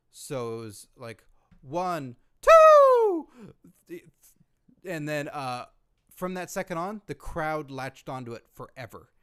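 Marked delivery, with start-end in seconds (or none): 2.5-3.3 very high, very loud cracking yell. Retelling a referee's count from a past match, imitating a cracking voice. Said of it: "his voice cracked".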